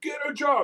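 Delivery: yelling, pitched high. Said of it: "his father's yelling at him".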